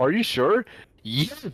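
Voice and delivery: mock cheerful voice acting. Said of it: "real happy".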